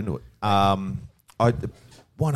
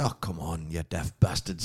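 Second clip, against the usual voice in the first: put-on Scottish accent, lower and quieter; 3 semitones lower, 5 dB quieter than usual. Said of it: "That's Scottish".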